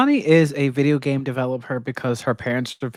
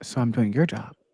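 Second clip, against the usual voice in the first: put-on under-breath mutter, quieter; 3 semitones lower, 4 dB quieter than usual. Imagining what Amani would say quietly: muttering under breath as Amani. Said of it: "Amani under her breath is gonna be like".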